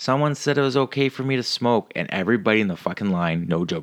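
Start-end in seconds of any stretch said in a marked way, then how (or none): 0.0-1.9 put-on, high-pitched yelling. Recounting a woman in the Air Canada line told to put her cigarette out, retelling her yelling back. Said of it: "And she yells back".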